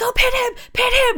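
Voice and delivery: very high-pitched, worked-up screaming. Retelling the referee jumping up and down at a match: imitating the referee screaming.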